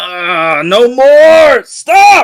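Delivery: shrill, very high, very loud shout. Narrating a role-play scene with guards, the speaker voices Gaston: Gaston shouting. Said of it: "Gaston shouts".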